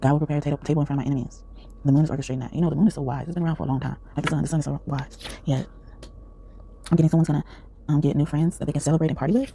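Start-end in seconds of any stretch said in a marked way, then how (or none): none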